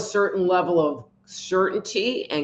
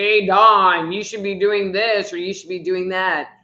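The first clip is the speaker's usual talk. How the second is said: big, resounding, booming divine voice from above; 4 dB louder than usual. Describing how people imagine God speaking to them, booming voice of God. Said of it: "this booming voice saying".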